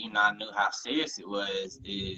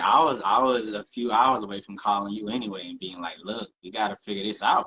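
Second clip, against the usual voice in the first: usual speaking voice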